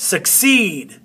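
stress on second syllable of succeed. Showing learners where the accent falls: stress on ceed. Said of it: "You hear it?".

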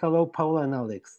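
plain

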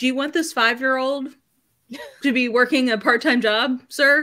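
sarcastic, mocking tone. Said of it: "I'm like".

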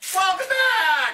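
voice squeaking up very high. Welcoming viewers back, voice squeaks: voice squeaked. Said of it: "it squeaked".

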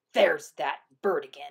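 muttering. Narrator reads Coyote spotting the hummingbird again; muttered. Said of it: "he muttered".

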